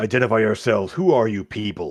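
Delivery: billowing voice coming from down below. Narrator voices an unseen figure calling up from below, in a booming voice from below. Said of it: "kind of a booming voice there from down below".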